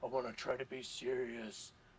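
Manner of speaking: low, dark, brooding growl. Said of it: "the dark, brooding voice".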